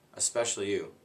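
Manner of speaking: ordinary delivery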